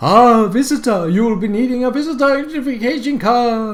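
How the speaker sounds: high, spectral, ghostly voice. A voice from nowhere greets a visitor at the town hall door: ghostly voice. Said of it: "a ghostly voice comes out of nowhere".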